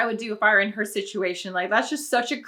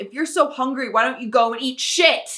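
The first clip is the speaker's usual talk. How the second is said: play-acted, wrathful, furious shout; 3 semitones higher, 4 dB louder than usual. Retelling a mother turning on her son, imitating an angry yell. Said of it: "whips around towards him and yells".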